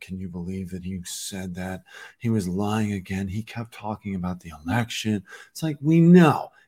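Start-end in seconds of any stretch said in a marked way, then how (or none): 0.0-5.2 mock stern, serious, admonishing, scolding tone. Mocking commentators who admonish everybody: imitating a serious admonishing tone. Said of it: "having these serious tones of voice".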